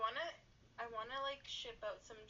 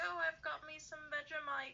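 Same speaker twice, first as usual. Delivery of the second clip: put-on English accent, pitched up; 6 semitones higher, 4 dB louder than usual. Retelling what a camp girl from England said: imitating an English accent. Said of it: "you had to do the accent".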